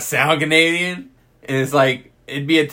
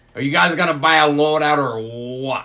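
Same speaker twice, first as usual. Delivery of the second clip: put-on French Canadian accent on every word. Retelling what a drunk, passive-aggressive French Canadian player said: imitating a French Canadian accent. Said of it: "He has a French accent".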